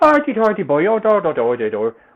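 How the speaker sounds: light, high, loud Welsh lilt. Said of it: "although not, like, full on".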